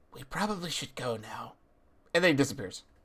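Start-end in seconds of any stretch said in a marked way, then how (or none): 0.2-1.6 hushed, very quiet half-whisper. Voicing a character who appears and half-whispers into another's ear: half-whispering. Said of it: "He whispers into Chet's ear".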